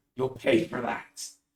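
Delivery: words hissed through the teeth. In a tabletop game, the wounded woman answers her attacker, hissing. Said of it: "She hisses".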